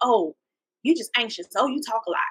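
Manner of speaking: put-on passive-aggressive sarcastic teasing tone. Describing people in your circle who jab at you, with mock-sarcastic teasing. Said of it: "They being passive aggressive and sarcastic".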